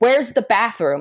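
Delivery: put-on unhinged, desperate, frantic shout. Retelling shouting a question at a kid who doesn't speak English, re-enacting a frantic shout. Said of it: "now I'm shouting it like a psychopath".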